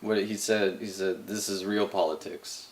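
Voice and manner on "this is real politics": ordinary delivery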